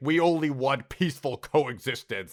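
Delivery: acted slow, sinister, threatening, menacing delivery. Quoting Remick's line from the episode: menacing Remick voice. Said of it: "he says it in a very menacing way".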